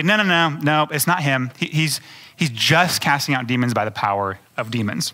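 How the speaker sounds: ordinary delivery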